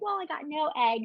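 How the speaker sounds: high, tearful voice, crying through the words. Retelling coming out of an egg retrieval: imitating own past crying. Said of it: "on crying".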